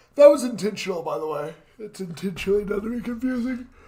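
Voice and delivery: talking through a stretching yawn. Discussing a book chapter while reading aloud, yawning while talking. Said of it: "I can't stop yawning".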